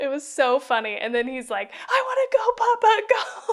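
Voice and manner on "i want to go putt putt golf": put-on very high, loud child's tantrum wail and scream. Retelling a movie scene of a kid on a bus: imitating Max's tantrum screaming. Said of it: "He's just having a meltdown".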